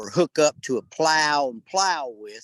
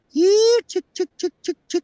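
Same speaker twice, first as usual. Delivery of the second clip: very high farmyard chicken-calling voice; 4 dB louder than usual. Showing how to speak chicken: chicken-calling voice. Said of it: "make your voice go like this and just go".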